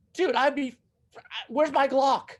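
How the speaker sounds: high, exasperated mock voice. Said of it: "I'm just so like".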